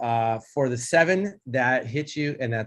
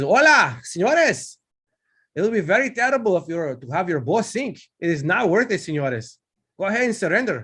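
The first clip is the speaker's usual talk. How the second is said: calling out from afar, voice raised; 7 semitones higher, 5 dB louder than usual. Voicing a voice from the bad guys' pilot house: enemy pilot voice. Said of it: "you'll hear a voice from their pilot house, and he says".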